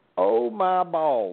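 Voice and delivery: slow, drawn-out mock holler of pain.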